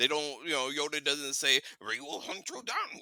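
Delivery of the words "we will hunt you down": put-on old master voice, higher and quieter. Imitating what Yoda would say to a Jedi who leaves: Yoda voice. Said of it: "Just had to do it in Yoda's voice".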